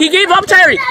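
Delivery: loud, high, frantic yelling.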